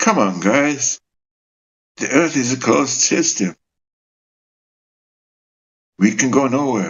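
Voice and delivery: said with resignation, given-up tone. Retelling what someone said in a video: imitating a resigned tone. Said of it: "in a resignation tone".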